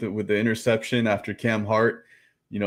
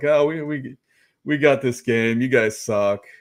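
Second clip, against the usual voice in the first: mock smug, boastful, cocky, arrogant tone; 2 semitones higher than usual. Mocking rival fans: imitating cocky arrogant fans. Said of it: "they're so cocky and arrogant".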